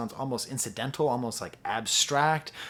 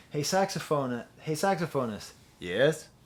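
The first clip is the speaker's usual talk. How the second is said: put-on Canadian accent, done for show. Retelling calling out to a saxophonist; Canadian accent. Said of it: "That's my Canadian accent".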